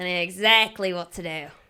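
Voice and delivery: put-on Australian accent. Retelling what the man sent to deal with their rats said, imitating an Australian accent. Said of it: "And he's Australian".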